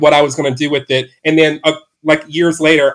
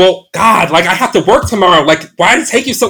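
put-on, very aggressive, hostile scolding tone; 3 semitones higher than usual. Retelling how a man at his door scolded him for being late: imitating an aggressive complaint. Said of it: "very aggressive".

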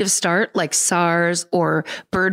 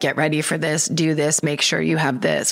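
put-on sly talking out of side of mouth; 3 semitones lower than usual. Retelling a doctor's early warning: imitating talking out of the side of the mouth. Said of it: "out of the side of their mouth being like".

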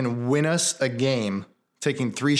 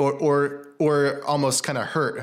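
ordinary delivery

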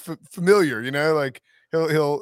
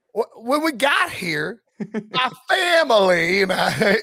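put-on Southern accent, high and very slow; 6 semitones higher, 3 dB louder than usual. Mocking Brian Kelly's introduction at a basketball game, in Brian Kelly's put-on Southern accent. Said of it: "Any Southerner would say ain't won".

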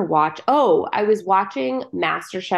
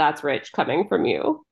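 usual speaking voice

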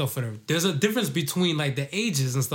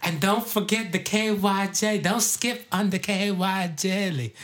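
put-on old-school older woman's voice, pitched up; 5 semitones higher than usual. Acting out an older partner's request: old school Auntie Maddie voice. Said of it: "that old school, like, Auntie Maddie voice".

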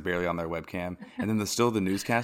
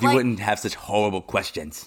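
raised, put-on British accent; 2 semitones higher, 6 dB louder than usual. Mimicking what he says to the reporters, in a mock british accent. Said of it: "It was a British Grinch".

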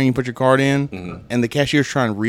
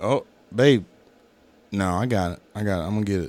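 frantic, panicked, flustered, reassuring delivery; 4 semitones lower, 6 dB quieter than usual. Retelling own words while stuck in a drive-through line: imitating own panicked self. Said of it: "I was freaking the fuck out".

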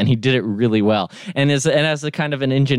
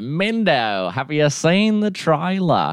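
bad, fake Australian accent, slower; 6 semitones higher than usual. Mid-conversation, the speaker slips into a bit, terrible Australian accent. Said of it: "my terrible, terrible Australian accent".

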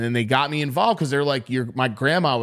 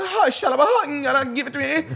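put-on really high-pitched voice; 14 semitones higher than usual. Retelling how a man's voice went weird while he spoke, mimicking his really high voice. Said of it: "His voice got really high".

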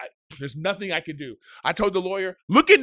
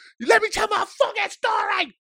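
mock very high, furious, raging outburst. Speaker retelling how they flipped out at a man, retelling a furious outburst. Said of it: "And I fucking flip out".

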